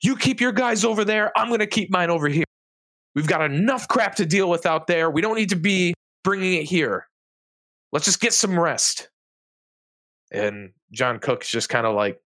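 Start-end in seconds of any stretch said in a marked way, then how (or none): 0.0-9.1 high-pitched yelling. Voicing a guard breaking up a fight: yelling guard. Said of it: "Marcus just yells".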